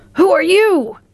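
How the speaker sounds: very high, urgent cry. The Tin Woodman rushes at the little man and demands who he is, crying out. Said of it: "rushed towards the little man and cried out".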